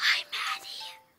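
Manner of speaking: hushed whisper. Greeting a girl on the phone after she says hi: whispering. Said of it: "Why are we whispering?".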